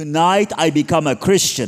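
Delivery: very loud, high-pitched shouting yell. Retelling a mother's late-night phone call: imitating someone yelling loudly. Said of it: "really loud on the phone".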